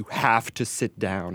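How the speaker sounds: acted firm, a little loud. Teacher retells telling a screaming student to sit down, retelling a raised voice. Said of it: "I got a little loud and I said".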